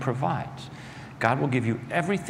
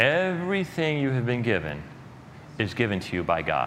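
slow, deliberate, unhurried, each word set down; 3 semitones lower than usual. Preaching on a parable, repeating the main point: slow, deliberate delivery. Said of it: "I may say this slowly".

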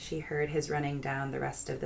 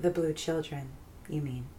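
plain reading voice

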